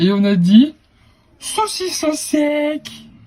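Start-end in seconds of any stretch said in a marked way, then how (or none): 1.4-2.9 put-on high, slow, silly sing-song baby talk. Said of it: "du moment qu'on le dit avec l'intonation".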